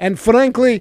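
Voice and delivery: mock Russian accent, heavily laid on, rattled off fast. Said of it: "and now I'm Putin".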